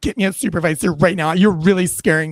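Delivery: imitated serious demanding tone. Retelling a stopped driver demanding a supervisor: imitating a serious demand. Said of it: "he looks at me really serious".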